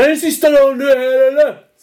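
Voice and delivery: acted bellowing yell. Speaker recounts a guy roaring in the corridor on the last internship day, retelling a roar. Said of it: "Så vrålar den här killen i korridoren".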